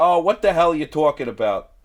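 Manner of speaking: very loud, fully belted cartoon character voice. Retelling a funny episode scene: Harley Quinn voice. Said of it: "going into the Harley Quinn, like, ... voice".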